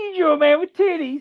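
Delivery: high, mocking, squealing kid voice with snickering. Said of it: "he says".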